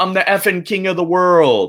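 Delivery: very high, sudden, loud blurted outburst. Retelling a student standing on a desk, imitating a loud blurt. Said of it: "blurt out very loudly".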